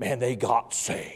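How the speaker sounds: put-on deep, hushed, whispered old-time preacher intoning. Describing how old preachers talked from the pulpit, the speaker imitates them: deep old-preacher voice. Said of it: "They'd get real deep in their voice".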